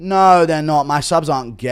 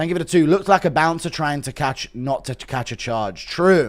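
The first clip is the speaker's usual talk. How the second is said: normal talking voice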